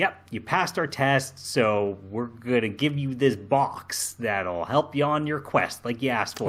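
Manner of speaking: ordinary talk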